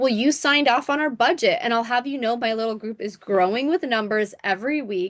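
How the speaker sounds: usual speaking voice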